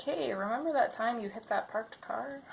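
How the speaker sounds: ordinary delivery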